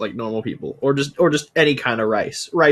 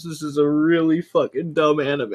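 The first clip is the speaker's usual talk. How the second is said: talking through hard laughter; 4 semitones higher than usual. Reacting to a dumb anime, laughing while talking. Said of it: "I'm laughing so much".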